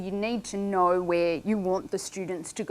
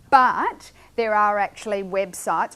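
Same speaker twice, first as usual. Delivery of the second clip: ordinary delivery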